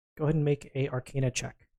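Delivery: ordinary talk, nothing marked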